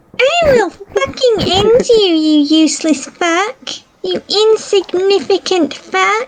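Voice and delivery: small, fierce, high, furious angry-kitten rage. Asked by a player to join in, voice Flowey like an angry kitten. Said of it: "Flowey sounds like an angry kitten".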